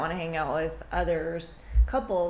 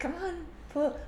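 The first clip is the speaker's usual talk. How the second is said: very high, coaxing tone. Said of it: "and I'm like".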